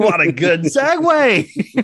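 shrill, very high, drawn-out shout. Talking away and about to apologize for yelling a lot, yelling. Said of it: "sorry, I'm yelling a lot".

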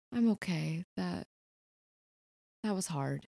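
bashful and embarrassed. Narrating a scene, the speaker voices a woman wiping her eyes, bashful and embarrassed. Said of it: "really bashful".

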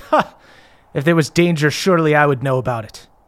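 laughing and chuckling while speaking in character. Voicing a character told the castle is in danger: laughing while talking. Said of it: "He laughs and goes".

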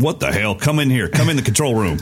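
attempted Nashville accent. Retelling what he said while getting drum tones, in a Nashville accent. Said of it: "that's the best Nashville accent I can give you".

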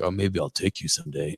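very soft, low, quiet, hoarse rasp. Quoting a guy answering girls who asked about his brunch spot, put-on raspy throat-cancer voice. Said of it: "That sounded like he has throat cancer".

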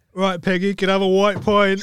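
put-on London Cockney accent. Role-playing an EastEnders scene, asking Peggy for a pint in a Cockney accent.

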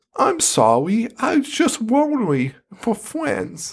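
put-on very high, mournful little ghost child voice. Retelling what a ghost kid says, imitating the saddest ghost kid voice. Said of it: "the ghost kid's voice is like the saddest voice of all time".

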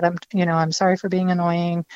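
plain

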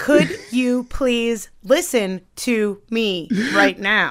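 condescending, patronizing, every word over-enunciated. Showing how enunciating every word could come across, super condescending. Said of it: "doesn't that sound like super condescending if you're like".

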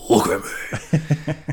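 sudden, blurted, high caped-hero voice. Retelling a moment, the speaker repeats what they blurted out: Batman voice. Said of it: "in the Batman voice".

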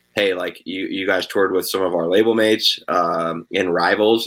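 normal talking voice

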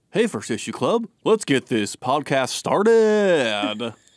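"started" drawn out, cartoon-turtle style voice. Trying a Keanu Reeves impression after being asked: Keanu Reeves impression. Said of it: "That was really good".

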